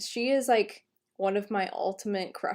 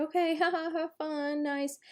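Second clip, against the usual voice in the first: put-on absent, uninterested, distracted tone, pitched up; 7 semitones higher than usual. Retelling how a friend on the phone answers without listening: imitating a friend not listening. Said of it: "her friend is totally not listening and is just like".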